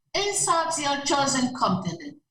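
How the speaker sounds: ordinary talk, nothing marked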